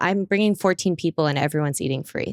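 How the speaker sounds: plain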